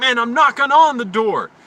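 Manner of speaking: high, loud, annoyed, shouted delivery. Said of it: "He's like".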